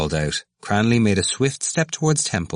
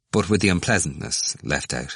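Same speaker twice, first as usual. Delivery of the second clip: usual speaking voice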